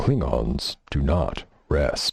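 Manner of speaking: put-on sci-fi alien character voice. Player voicing a dwarf character in a game, in a Worf voice. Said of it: "do his voice like Worf".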